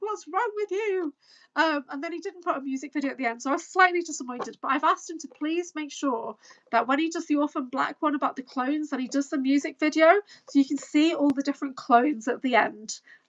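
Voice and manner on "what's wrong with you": put-on high, fed-up, exasperated shouting. Describing watching a video, the speaker retells shouting at the screen. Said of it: "I'm like shouting at the screen".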